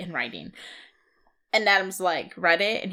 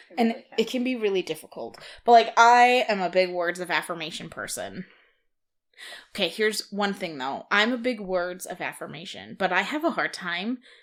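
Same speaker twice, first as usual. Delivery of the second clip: usual speaking voice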